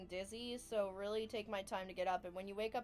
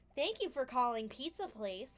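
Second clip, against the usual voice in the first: fake customer service phone voice, higher and louder; 4 semitones higher, 4 dB louder than usual. Imitating how they answer the phone at work: put-on phone persona voice. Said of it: "do this little persona thing when I'm on the phone".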